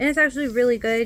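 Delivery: ordinary delivery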